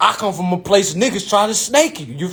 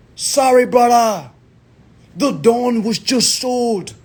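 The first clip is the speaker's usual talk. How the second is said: put-on Jamaican accent; 3 semitones higher than usual. Quoting the financial manager who finally calls back, in a put-on Jamaican accent. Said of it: "I don't know why I'm talking like a Jamaican".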